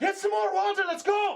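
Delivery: bellowing, booming yell, way up high and loud. A storyteller voices a massive dwarf running with a water barrel, very loud shouting. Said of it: "one very loud voice shouting above even the clanging".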